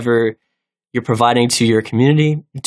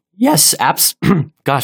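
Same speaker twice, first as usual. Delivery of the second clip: excited, high voice breaking mid-word; 3 semitones higher than usual. Answering a question about making videos of the game: voice cracking. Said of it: "my voice is cracking so hard".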